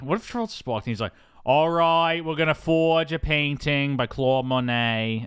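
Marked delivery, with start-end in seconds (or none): 1.4-5.3 put-on Boston accent, higher. Speaker imitates an actor trying a Boston accent in a movie: [name]'s Boston accent impression. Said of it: "trying to do a Boston accent".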